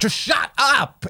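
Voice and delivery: exasperated, fed-up, high, frustrated snapping outburst. Retelling snapping at a mother after failing to remove contact lenses: imitating own frustrated snapping. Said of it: "I got so frustrated".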